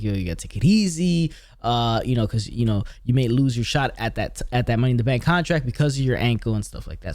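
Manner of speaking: ordinary talk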